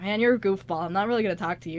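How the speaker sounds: usual speaking voice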